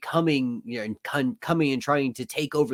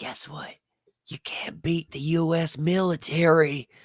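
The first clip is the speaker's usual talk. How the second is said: stage whisper close into the microphone; 4 semitones higher than usual. Imitating Joe Biden speaking into a microphone: imitating Joe Biden whispering. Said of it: "whispering into the microphone".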